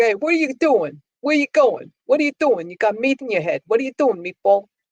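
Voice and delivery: high Brooklyn accent. Wishing a voice assistant came in different dialects, demonstrating a brooklyn accent. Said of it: "I was saying Brooklynese".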